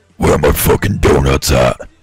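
very deep, low-pitched voice. Showing Barnes the best impression of him: imitating Barnes. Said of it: "The best impression of you is this".

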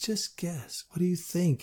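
tender, gentle, softly spoken. Narrator reads a woman's line as she walks close beside the narrator: gentle. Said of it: "She spoke gently".

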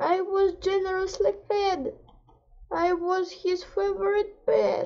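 crying sadly, tearful, weeping. A cat answers someone who asked why it is sad, crying sadly. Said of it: "Don't cry, cat".

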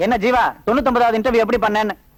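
fast, mocking, taunting. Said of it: "நக்கலா கேக்குறானுங்க".

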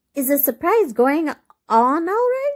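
anxious, worried, eager, high-pitched delivery. Someone asks a weary woman resting on the sofa about a surprise, anxiously. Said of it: "Asked Effie anxiously".

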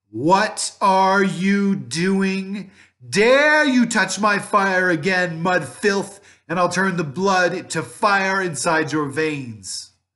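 very high, very loud, very slow, shrill witch voice. Narrator reads the witch calling out after her sweet tones, in a loud, terrible voice. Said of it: "in a loud, terrible voice".

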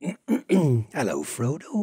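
Dorset West Country accent. Recalling the voice used for a hobbit, in a West Country accent. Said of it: "How's it go, Tom?".

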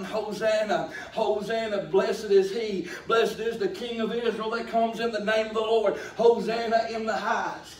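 usual speaking voice

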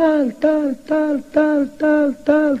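high echo-like voice, fading out.

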